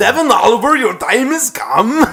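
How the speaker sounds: put-on Austrian accent. Quoting strange posts from an impostor account, in a put-on austrian accent. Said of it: "like they're Austrian".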